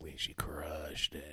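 very low, very quiet, creepy whisper. Quoting the other speaker's dad on a phone call, creepy whisper impression of dad. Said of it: "You like this whisper voice".

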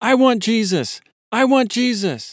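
yelling, high-pitched and loud.

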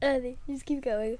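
talking through a yawn. Half-awake during a show with a co-host, yawning while talking. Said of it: "don't yawn into the show".

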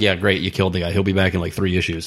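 ordinary talk

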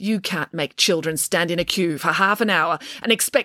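plain

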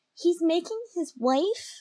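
mock quiet, hushed voice. Retelling what Luke said in the story, in a lowered, hushed voice. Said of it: "Luke lowers his voice".

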